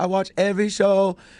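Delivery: put-on toned-down Filipino accent with a high voice. Retelling meeting a fan, quoting an older Filipino woman: mild Filipino accent. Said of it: "going right down the middle of the uh, Filipino accent".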